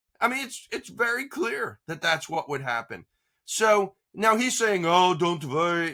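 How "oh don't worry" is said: put-on Russian accent. Quoting the president to the others on the show; Trump impression with Russian accent. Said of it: "I don't know why I'm talking with a Russian accent".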